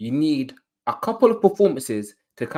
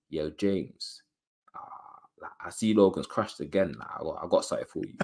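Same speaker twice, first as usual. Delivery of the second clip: low, deep, breathy, hushed sweet-talking voice; 8 semitones lower, 8 dB quieter than usual. Acting out someone sweet-talking a man in a morning voice note, in a deep voice. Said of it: "deep voice and that".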